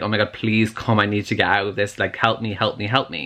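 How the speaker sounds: put-on desperate, panicked, begging voice. Retelling a character drowning and calling for her magic, acting out a desperate plea. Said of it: "thinking she's gonna die".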